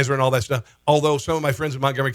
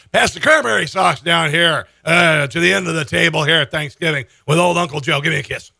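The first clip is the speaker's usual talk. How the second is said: put-on slurred speech; 2 semitones higher, 3 dB louder than usual. Mocking a speech by imitating Uncle Joe at Thanksgiving: imitating Uncle Joe slurring. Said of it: "Kind of slurring a little bit there".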